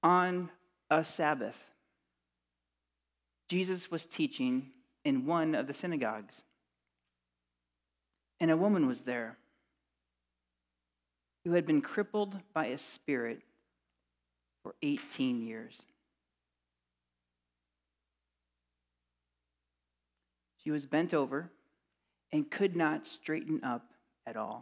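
calm, slow reading at an unhurried pace. Reading a scripture passage aloud to listeners this morning, slow, unhurried reading. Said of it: "I'm going to read slow, unhurried".

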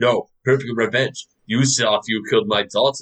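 fake, clumsy, off-target put-on Russian accent. Discussing a movie's revenge reveal, quoting a character in a bad Russian accent. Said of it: "that's not even a Russian accent".

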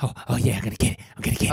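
eager, fast, breathless panting like a dog. Showing how the character should sound, hungry for wealth: panting voice. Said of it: "add a little bit of a pant".

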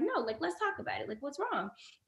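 gentle, steady, soft, calm soothing voice. Retelling what the speaker said to an upset woman, retelling talking really calmly. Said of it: "I'm talking really calmly".

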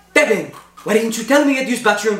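put-on teacher voice with Filipino accent. Retelling the teacher scolding a student who wet himself: imitating a Filipino teacher. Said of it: "our Filipino teacher".

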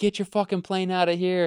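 fed-up, angry, high-pitched shouting. Retelling how people yelled at a man whose seaplane was tied behind a speedboat, retelling people yelling. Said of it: "people were like yelling at him like".

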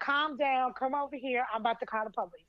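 ordinary talk

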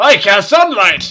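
dopey, clueless, loud and high-pitched voice. Acting out a spellcaster casting sunlight on drow: acting an idiot caster. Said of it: "some idiot caster coming across the Lauren Drow".

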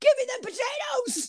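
very high, annoyed, fuming, angry voice. Imagining Eddie Kingston storming into catering, imitating a fuming shout. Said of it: "Eddie Kingston storming through annoyed".

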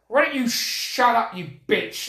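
sassy, cheeky, dismissive, tossed-off delivery. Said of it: "it's really sassy".

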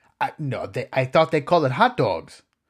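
terrible, bad fake German accent. Performing a joke dialogue for viewers, in a self-described terrible German accent. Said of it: "my German accent is pretty terrible".

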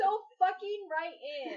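playful fake fury, loud and shrill. Urging listeners to write in: mock rage voice. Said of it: "No one's rage voice compares to [name]'s".

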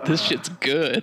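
acted-out, grossed-out, disgusted tone, pitched high. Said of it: "make this gross".

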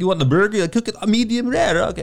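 put-on high-pitched Eastern European accent. Retelling what the Eastern European host said: Despicable Me accent. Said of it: "talk like this, like, uh, Despicable Me".

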